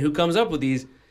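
plain

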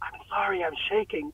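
very soft, breathy, barely audible whisper. Retelling posing for a picture while holding his hand: retelling a whisper. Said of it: "and then I whisper".

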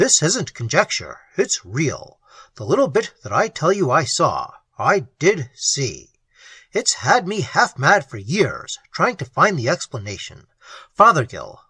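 plain

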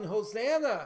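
loud, high crowd shout. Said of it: "The people were shouting".

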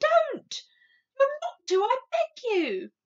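shrill, very high, loud pleading outcry. Sophie cries out to the BFG: crying out. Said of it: "cried Sophie".

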